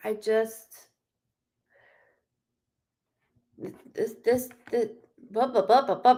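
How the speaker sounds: halting, stammering stutter. Telling you guys how loud they are, stuttering. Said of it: "Sorry, I stutter".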